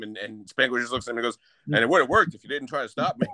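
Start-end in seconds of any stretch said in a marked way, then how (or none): 1.7-3.3 imitated dead-serious, matter-of-fact deadpan delivery. Retelling a favorite film moment, quoting a character's reply, imitating a deadpan reply. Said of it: "One of the best deadpan deliveries".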